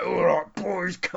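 macho tough-guy bouncer voice. Going through a script, the speaker shows how the bouncer should sound: macho man voice. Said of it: "do a proper like macho man voice for the bouncer".

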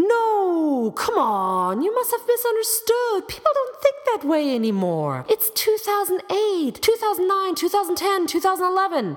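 derisive voice.

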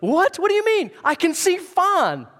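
high, loud, amazed cry of wonder.

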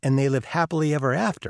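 ordinary talk

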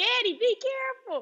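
mock, shrill, very high-pitched calling-out yell. Recounting yelling a warning to their dad during a commotion, retelling a yell. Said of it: "I yelled".

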